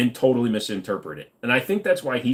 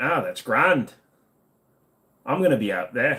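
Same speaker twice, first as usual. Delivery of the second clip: bad Irish accent slipping into Scottish. Showing some irish words: bad irish accent slipping into scottish. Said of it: "I'm going right for it. Right into the Scottish".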